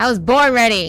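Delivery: loud, cocky, boastful bravado.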